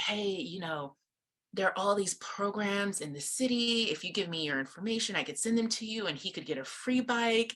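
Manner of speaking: sly, conspiratorial, confiding aside. Retelling a father's offer to the speaker's husband at a playground: imitating a conspiratorial tone. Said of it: "conspiratorially, like, puts his arm around".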